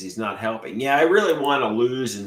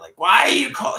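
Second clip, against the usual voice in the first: shrill, very high-pitched, acted scream; 12 semitones higher, 5 dB louder than usual. Imagining mom's reaction if he calls her late at night, imitating mom screaming. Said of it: "she's gonna scream at me".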